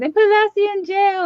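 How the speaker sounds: very high, frantic, freaked-out shriek. Retelling screaming as a small child when Lassie went to the pound: imitating own childhood screaming. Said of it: "but I was screaming".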